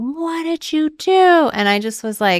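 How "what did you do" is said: acted very high, very slow, drawn-out scream. Retelling a mother screaming down the hall: imitating mom screaming. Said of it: "screaming down the hall".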